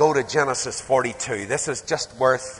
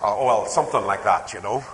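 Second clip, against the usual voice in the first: ordinary delivery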